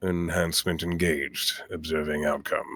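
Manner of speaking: very quiet, hushed put-on character voice. Voicing Cascade casting a spell on himself: quiet Cascade voice. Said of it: "he just kind of quietly says".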